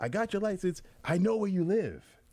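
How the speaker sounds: put-on, very high, heavily stressed, emphatic delivery. Retelling what she said after catching the license plate cover, retelling an emphatic threat. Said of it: "she said it with emphasis".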